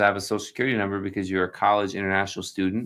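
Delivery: ordinary delivery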